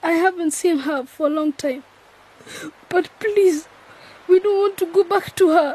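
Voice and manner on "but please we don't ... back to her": high, agitated, distressed, upset pleading tone. A runaway begs not to be sent back to their aunt, upset. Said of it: "calm down. Calm down".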